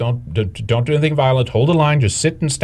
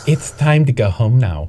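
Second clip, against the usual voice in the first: put-on, mock condescending and patronizing tone. Quoting a clip and mocking its tone: mock-condescending tone. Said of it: "that condescending tone is".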